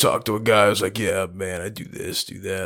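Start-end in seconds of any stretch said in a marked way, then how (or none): 1.0-2.7 low, slow, creaky vocal-fry dude drawl. Complaining about vocal fry, the speaker imitates a guy who does it, mocking vocal fry. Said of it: "Like that kind of thing".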